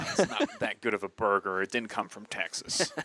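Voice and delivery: playful, put-on fake American accent. A podcast co-host messing around in the booth, in a put-on American-sounding accent. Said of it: "Is that your American accent?".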